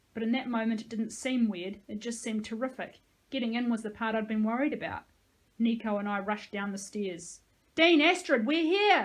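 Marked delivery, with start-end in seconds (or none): 7.8-9.1 loud, high-pitched, full yell. Narrator reads their own line, rushing downstairs calling to Dean Astrid, shouting. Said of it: "I shouted".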